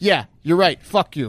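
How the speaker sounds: put-on condescending tone. Mocking how a man answered direct questions at his hearing: mock-condescending Bill Barr. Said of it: "like condescendingly".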